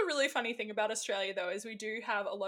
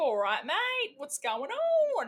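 over-the-top put-on Australian accent, loud and slow; 6 semitones higher, 6 dB louder than usual. Showing how some Australians put their accent on, put-on Australian accent. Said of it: "we put it on".

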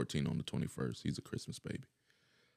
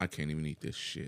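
ordinary talk, nothing marked

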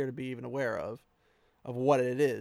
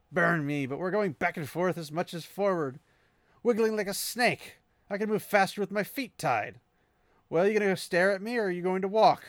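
on-edge, testy, irritated ranting, pitched up; 6 semitones higher than usual. Describing a sneaky trek, the speaker quotes Elias's lines, acting out Elias on edge. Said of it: "You can tell he's a bit on edge".

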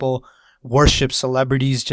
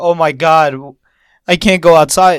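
loud, drawn-out fake whiny sobbing; 3 semitones higher, 9 dB louder than usual. Imitating celebrities in their mansions, mock crying. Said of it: "saying they crying like".

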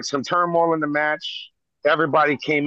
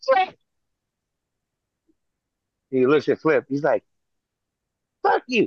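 usual speaking voice

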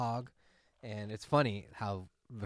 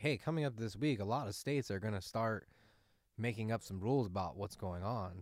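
ordinary talk, nothing marked

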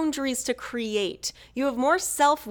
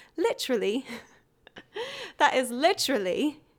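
put-on English accent on "literally"; 3 dB quieter than usual. Saying their favorite word the way they like to, in an English accent. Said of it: "my favorite word to say in an English accent".

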